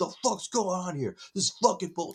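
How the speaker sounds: very high, screamed, ranting delivery. Retelling a waiting man screaming at the front desk, imitating a man screaming. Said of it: "screaming at him".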